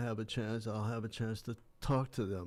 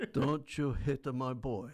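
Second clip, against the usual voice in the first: put-on screaming; 3 semitones higher than usual. Retelling a spectator mother's outburst after her son is hit: imitating someone screaming. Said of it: "my mother screamed out".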